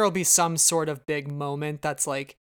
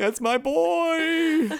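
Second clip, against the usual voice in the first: put-on grieving father voice, higher and louder; 13 semitones higher, 4 dB louder than usual. Acting out a father's grief as a joke: Cedric Diggory's dad impression. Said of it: "are you doing, uh, Cedric Diggory's dad".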